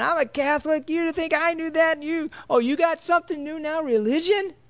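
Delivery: put-on old woman voice, very high, shrill, scolding yell. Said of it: "And she's yelling".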